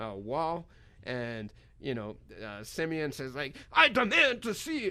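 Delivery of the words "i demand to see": put-on heavy Russian accent, very high-pitched and loud. Held in a back room after passports are taken, Simeon speaks up: imitating Simeon's Russian accent. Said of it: "in this thick Russian accent that he's got".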